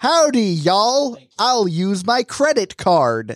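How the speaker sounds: put-on American cowboy accent. Imagining people who buy cowboy hats, the speaker voices them; American cowboy accent. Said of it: "Everybody has an American accent".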